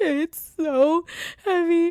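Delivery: put-on panicked crying. Retelling own thoughts during heavy deadlifts, imitating own past crying.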